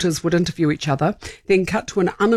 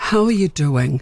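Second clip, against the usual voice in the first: put-on business voice, pitched much lower; 3 semitones lower than usual. Demonstrating the voice used for North Island businesses, a North Island business voice. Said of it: "I have a voice I use for the North Island businesses".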